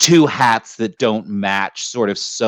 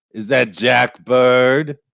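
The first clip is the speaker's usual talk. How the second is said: voice called out across a distance; 3 semitones higher than usual. Speaker retelling what a man shouted out, retelling a shout. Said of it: "He just shouts out".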